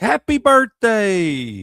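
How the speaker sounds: put-on shrill, booming, swooping, very high little-kid shout. Retelling how the three-year-old nephew answers on the phone: imitating a toddler yelling. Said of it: "So he just yelled that at you".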